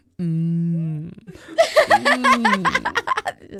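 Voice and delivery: put-on mouth-full talking. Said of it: "chewing on it".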